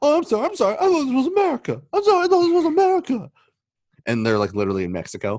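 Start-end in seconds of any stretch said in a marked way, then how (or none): 0.0-3.3 shrill, high, loud, combative voice. Retelling a cartoon scene where Randy apologizes after a fight: imitating Randy. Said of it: "he gets into a fight and like".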